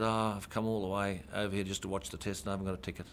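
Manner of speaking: ordinary talk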